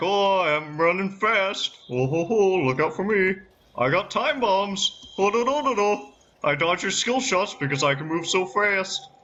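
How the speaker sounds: sky-high, mocking, taunting show-off voice. Mocking own game character that dodges skill shots: put-on taunting voice. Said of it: "Just being like".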